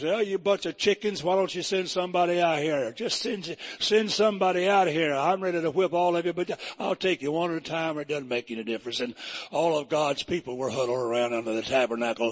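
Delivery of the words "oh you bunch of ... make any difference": normal talking voice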